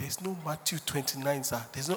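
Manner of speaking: quiet low whisper. Retelling how someone corrected a false prophet: imitating someone whispering. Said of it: "somebody whispered".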